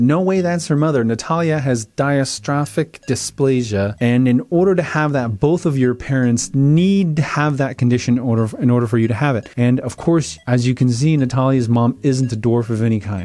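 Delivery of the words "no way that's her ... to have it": ordinary talk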